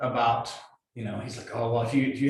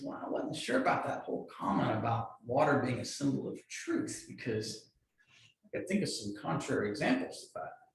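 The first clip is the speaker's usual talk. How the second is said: sheepish, soft, trying-to-be-nice hedging tone; 8 dB quieter than usual. Retelling a guy's polite objection after a service: imitating Ian speaking sheepishly. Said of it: "he's sheepishly, he's trying to be nice".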